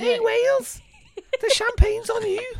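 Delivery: put-on, loud, very high Liverpool Scouse accent. After being asked to do their scouse too: scouse accent. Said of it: "do your scouse as well?".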